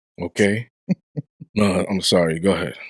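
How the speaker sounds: voice dropping into a low radio-host voice.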